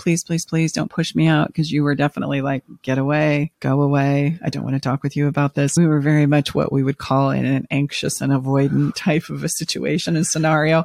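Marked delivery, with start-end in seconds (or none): 0.0-1.5 mock pleading, begging tone. Speaker recalls begging the person they've been with twelve years; imitating own past pleading. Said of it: "begging and pleading like".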